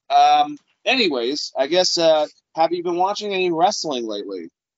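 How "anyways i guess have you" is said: plain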